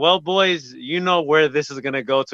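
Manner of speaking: normal talking voice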